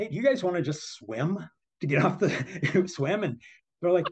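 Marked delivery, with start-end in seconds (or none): 0.0-3.2 playful, light, teasing, joking tone, pitched up. Retelling talking to swimmers over the radio: retelling a joking question.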